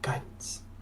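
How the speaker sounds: soft unvoiced whisper.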